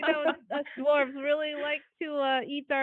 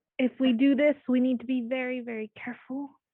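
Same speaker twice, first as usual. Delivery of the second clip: theatrical stage whisper; 2 semitones lower, 3 dB louder than usual. In a game, a character warns the rest of the group: stage whisper. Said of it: "She kind of stage whispers to the rest".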